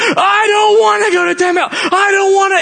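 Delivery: high, wailing, screaming tantrum. Speaker retells what he said while screaming at the door: imitating him screaming.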